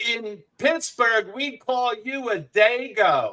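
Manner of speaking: mock very high, drawn-out shouting. Retelling what a lady in the back yelled at a late show: imitating someone yelling. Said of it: "and she yells".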